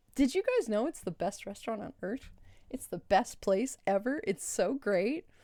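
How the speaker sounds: dripping, heavy, overdone, insincere sarcastic tone. Praising a restaurant to the viewers: heavy sarcasm. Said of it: "That is heavy sarcasm, by the way".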